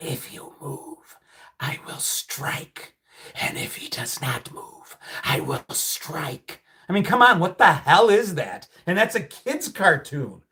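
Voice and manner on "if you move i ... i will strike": scary, menacing, slow whisper. Speaker recalls a scary kids' cartoon, doing the scary Khan the Cobra voice. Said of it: "And the voice".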